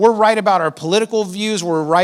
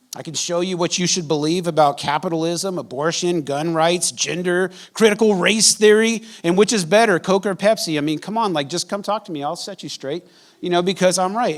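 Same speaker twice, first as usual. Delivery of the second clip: ordinary talk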